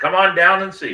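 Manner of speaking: mock loud sales pitch voice. Repeating the invitation to the museum as a joke: put-on car salesman pitch. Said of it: "I sound like a, a car salesman".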